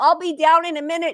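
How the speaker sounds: top-of-the-lungs calling out. Retelling her rainy morning, she acts out yelling to her carpool: retelling a yell. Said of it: "I'm yelling".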